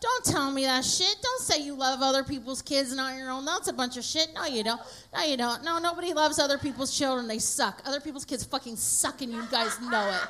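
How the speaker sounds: plain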